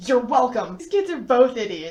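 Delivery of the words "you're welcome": put-on angry voice. Retelling the girl's angry reply as she helps with his books: Edith answering angrily. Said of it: "she's just as angry".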